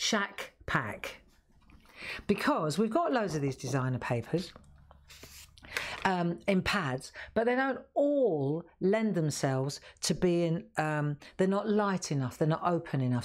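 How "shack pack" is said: drawn out, slow, deliberate, word by word. Repeating a pack name just mentioned, said slowly. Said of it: "I'll say that slowly".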